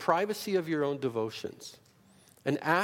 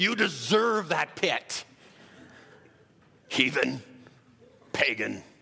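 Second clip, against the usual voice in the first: slow, hellfire, condemning fire-and-brimstone preacher voice; 3 dB louder than usual. Listing how different people would react to someone in a pit, fire-and-brimstone preacher voice. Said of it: "that's the best I can do".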